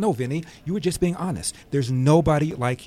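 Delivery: ordinary talk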